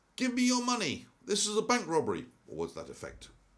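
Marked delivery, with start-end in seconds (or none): 0.2-2.3 put-on shouting in a Cayman Islands accent. Retelling a masked man with a gun bursting in, shouting in local Caymanian accent. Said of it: "he shouts out with a very local Cayman Islands accent".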